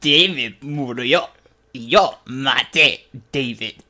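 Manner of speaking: very slow, ugly, hideous crone voice. Redoing a Spanish dialogue, the speaker plays it as an old lady: hideous old lady voice. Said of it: "the old lady with the hideous voice".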